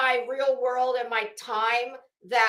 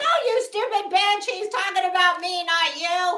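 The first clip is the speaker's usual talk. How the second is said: high, shrieking, scolding scream; 7 semitones higher, 4 dB louder than usual. Recounting watching a show, she reenacts screaming at her TV. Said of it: "I'm screaming at my T V".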